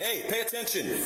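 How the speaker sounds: very high-pitched yelling. Someone breaking up a quarrel tells a person to pay attention, yelling. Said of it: "Why are you yelling?".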